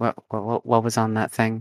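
soft whisper. Role-playing a horse leaning over to a companion to ask something: whispering. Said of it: "leans over to Boxer and whispers".

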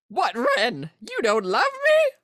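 high, loud, big cartoon parrot voice. Discussing why the directors put Iago in the movie, breaking into an Iago voice. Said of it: "Is that Iago?".

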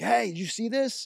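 acted-out yelling, pitched way up high. Retelling how a guy knocked on the windshield holding a paper, imitating a guy yelling. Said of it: "He's like yelling at me".

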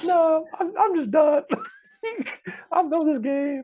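shrill, very high, very loud squealing voice. Retelling what a retiring cornerback told teammates: imitating a high-pitched voice. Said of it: "this dude's voice is so high-pitched".

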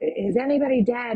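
man's voice calling out loudly. Recounting a man running down the cliff toward the speaker, retelling a man's yell. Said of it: "And he yells out".

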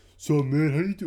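mock sloshed, slurring good-ol'-boy voice. Retelling how two drunk guys walked up and greeted them: imitating a drunk man's voice. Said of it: "They're just fucking sloshed".

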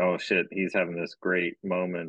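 normal talking voice

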